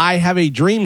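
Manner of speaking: usual speaking voice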